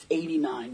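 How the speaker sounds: very quiet, low, leaned-in hushed murmur. Telling a story, the speaker imitates a woman leaning in, imitating her quiet voice. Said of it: "she gets all quiet and she's like".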